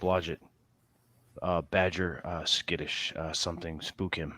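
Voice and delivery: faint, halting, as quiet as possible. Leaning in to speak to a companion, speaking as quietly as possible. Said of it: "as quiet as I can be with my voice".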